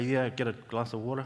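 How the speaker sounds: put-on New Zealand accent. Retelling ordering a glass of water in the States, New Zealand accent. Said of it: "That's how we speak".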